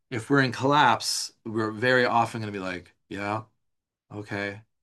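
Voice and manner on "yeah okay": flat, even monotone with no variation. Showing how someone in collapse sounds, in a flat monotone. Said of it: "very monotone, not much variance".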